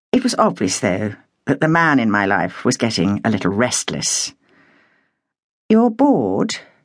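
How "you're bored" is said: mild, careful, gentle, pitch lightly raised. The narrator asks Patrick, who seems restless: gently asking. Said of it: "I inquired gently".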